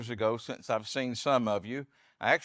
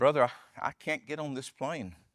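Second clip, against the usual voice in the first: imitated nervous man's voice, put-on nervousness. Telling of a brother approaching a plane, imitating a nervous man. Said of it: "began to get very nervous and say".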